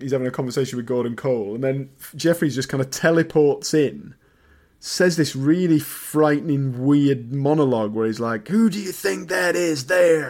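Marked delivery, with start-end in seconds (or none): 8.5-10.3 bad, clumsy American accent, pitched higher. Retelling a scene where Jeffries teleports in and points at Cooper, bad American accent. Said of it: "in a crap American accent".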